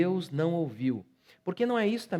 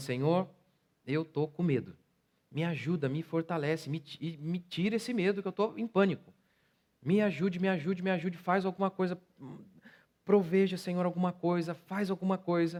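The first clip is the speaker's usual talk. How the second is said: plain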